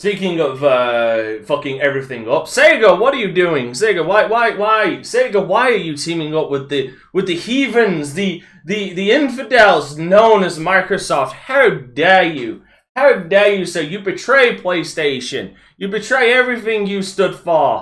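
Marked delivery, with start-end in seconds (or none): 2.4-17.8 high, sarcastic, fake indignation. Scolding Sega for teaming up with Microsoft: sarcastic mock outrage. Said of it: "And I say all of this sarcastically".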